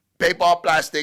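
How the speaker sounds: heavy, thick put-on Chinese accent. Imitating the food bagger at Publix; thick Chinese accent. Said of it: "like with a thick Chinese accent".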